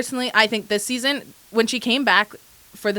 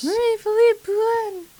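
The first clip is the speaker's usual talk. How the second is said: high-pitched near-whisper, higher; 11 semitones higher than usual. Saying a player's name a new way for a joke: high-pitched, almost whisper voice. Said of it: "high-pitched, almost whisper voice".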